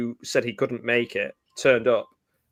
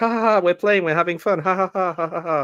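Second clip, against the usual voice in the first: mock giggly, childlike play voice, pitched up; 7 semitones higher than usual. Imitating Evelyn as childlike, laughing that they are playing: imitating Evelyn, childlike laughing. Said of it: "She's like".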